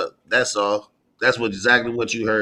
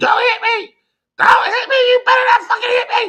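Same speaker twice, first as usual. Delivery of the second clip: acted, shrill, very high-pitched raised screaming; 5 dB louder than usual. Retelling what she screamed on a live: imitating someone screaming. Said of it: "But she's screaming".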